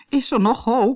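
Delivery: fearful, worried tone. A narrator voices a man lying on his bed asking if there is hope, anxiously. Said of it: "Vroeg meneer Pantalon angstig".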